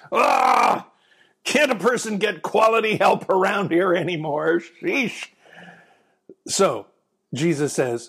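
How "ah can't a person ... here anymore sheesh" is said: exasperated voice through clenched teeth, pitched higher. Retelling Philip's doubting question, voice Jesus's reply as if through clenched teeth. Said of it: "saying through clenched teeth".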